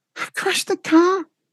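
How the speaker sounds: very high put-on female voice. Speaker rings a man pretending to be his wife, put-on high voice as Donna. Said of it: "I just put on a high voice".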